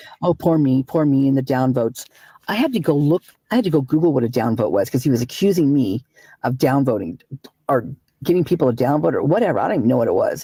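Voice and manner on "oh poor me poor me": ordinary talk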